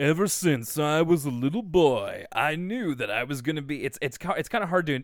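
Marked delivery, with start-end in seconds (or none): 0.0-3.8 put-on smarmy, slightly aged-up, older-sounding voice. Praising a voice actor's work, the speaker quotes the character in a smarmy Brain impression. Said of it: "it really sounds so smarmy".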